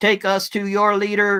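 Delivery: friendly alien announcer voice, high and loud. Telling a hypothetical story, a speaker voices the aliens' announcement in a nice alien voice. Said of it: "the aliens announce in a nice alien voice".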